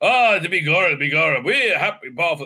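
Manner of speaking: embarrassing, bad put-on stage Irish accent. Mocking a show's embarrassing accent, in a bad stage Irish accent. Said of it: "No one's seen an Irish accent that embarrassing".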